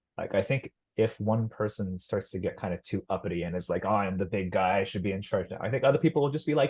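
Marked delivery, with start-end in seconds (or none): none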